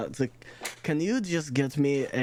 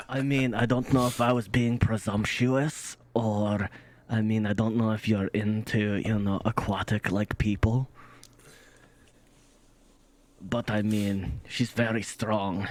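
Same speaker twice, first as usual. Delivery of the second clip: hushed whisper, lower pitch; 3 semitones lower than usual. Leaning in to talk privately in character as a wingman: whispering. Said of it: "I'm whispering".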